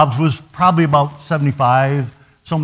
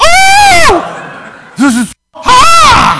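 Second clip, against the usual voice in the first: very shrill, very loud, very slow drawn-out wail; 9 dB louder than usual. Telling about a woman stepping into hot water, retelling a scream. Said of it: "she literally screamed".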